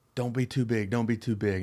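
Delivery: scream, called out urgently but held back. Retelling how Wash screamed at him before an at-bat: imitating Wash screaming. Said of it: "screaming at me".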